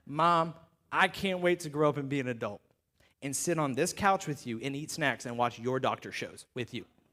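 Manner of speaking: put-on low, soft, earnest little-boy voice.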